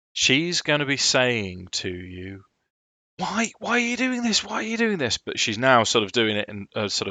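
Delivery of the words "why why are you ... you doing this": very high, frantic, petrified, desperate pleading voice. Voicing an NPC begging the attackers: petrified, desperate pleading. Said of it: "as if she's tearing her hair out".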